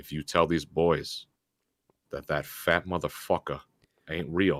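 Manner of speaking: put-on threatening voice. Retelling what his dad said after pulling him aside: imitating his dad threatening. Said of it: "he pulls me out and goes".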